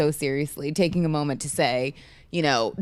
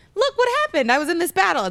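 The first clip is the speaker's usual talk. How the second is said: bad, very high, fast, swooping droid voice; 14 semitones higher, 3 dB louder than usual. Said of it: "That was my that was a bad impression".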